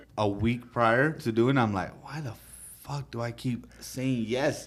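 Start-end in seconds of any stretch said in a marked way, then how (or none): 2.1-4.7 anxious, worrying voice. Retelling the week before speaking: imitating own anxious self. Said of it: "I just get super anxious".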